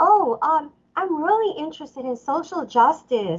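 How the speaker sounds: slow, sugary, sweet-natured put-on voice. Retelling how a woman answered an opening question, imitating her sweet tone. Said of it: "I'm just going to kind of sort of imitate her".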